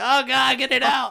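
mock very high, very slow, tearful pained wail. Telling how a board got nailed to their foot and mom was called: reenacting crying in pain. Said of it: "I'm sitting there crying like a bitch".

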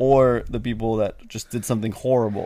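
ordinary delivery

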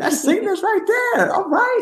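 high-pitched, impressed, exclaiming tone.

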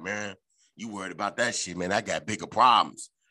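hushed stage whisper, under the breath. Retelling what a caller said late at night: imitating someone half-whispering. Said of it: "He was kinda whispering and shit".

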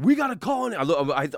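imitated shouting. Retelling a fall in a bar, how a man yelled out to the bar, imitating someone yelling. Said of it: "he yells out to the bar".

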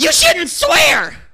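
shrill, very high, very loud yell. Retelling how a judgmental coworker reacted to swearing, imitating someone yelling. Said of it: "And he would just yell".

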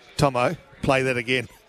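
ordinary talk

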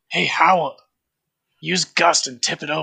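hushed whisper. Speaking in character to Howell, whispering. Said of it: "And I whisper".

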